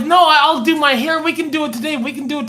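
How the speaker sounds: reassuring put-on mom voice. Retelling a mom insisting they go live: imitating Gidget. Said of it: "And Gidget's like".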